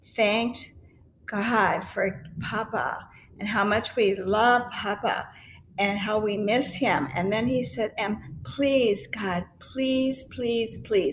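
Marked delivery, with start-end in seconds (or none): 8.0-11.2 put-on pleading, begging child voice. Retelling a child's prayer about Papa: imitating a child begging. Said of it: "he was just begging".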